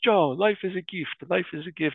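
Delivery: put-on heavy Italian accent, high-pitched. Joking with friend Joe as teenagers, quoting their priest: Father Peter's Italian accent. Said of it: "very heavy Italian accent".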